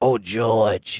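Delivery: feeble, weak sick voice, barely able to talk. Telling listeners a colleague could hardly talk, imitating Lady AJ's sick voice. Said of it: "She sound like this".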